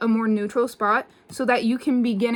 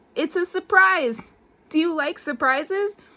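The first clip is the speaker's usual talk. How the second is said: put-on voice of a small boy; 5 semitones higher than usual. Retelling a scene where a little boy calls someone over: imitating a little boy. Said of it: "And he goes".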